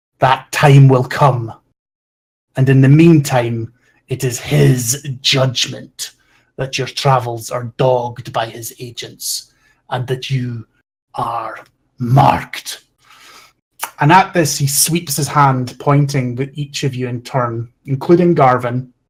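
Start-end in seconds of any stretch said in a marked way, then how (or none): 0.2-12.8 acted formal, proclaiming delivery. A game master voicing Mara as he addresses the players, loud and booming. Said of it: "he starts a sort of loud, booming voice".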